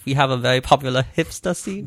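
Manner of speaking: put-on fake German accent. Quoting a French girl, the speaker slips into a German accent. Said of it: "That's a German accent".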